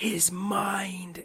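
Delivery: imitated whispering. Retelling what someone whispered in their ear at the movie: imitating a whisper. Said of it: "whispers in my ear".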